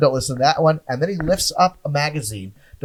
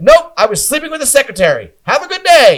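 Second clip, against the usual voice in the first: very high, flustered, panicked swooping blurt; 10 semitones higher, 6 dB louder than usual. Retelling answering the feds who asked if he worked there, a retold panicked reply. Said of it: "I panicked and went".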